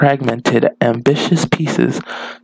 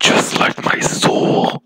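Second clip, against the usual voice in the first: very slow, deliberately dark, put-on voice. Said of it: "I'm gonna stop doing that in a dark voice".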